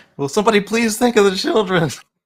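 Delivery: very high, very loud, shrill, sarcastic mock alarm. Joking about car buyers losing dealerships: mock concern, sarcastic.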